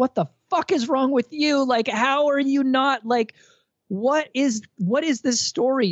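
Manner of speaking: very high, drawn-out shrieking scream. Retelling how Jody screamed from the corner during an interview: imitating Jody screaming. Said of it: "Jody just screamed out from the corner".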